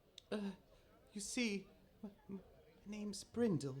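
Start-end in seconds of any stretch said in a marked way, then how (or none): 1.2-3.8 very quiet, high, faint, barely mustered voice. Narrating a game, voicing a girl looking up from her parchment; very quietly. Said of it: "barely able to uh muster, like, very quietly".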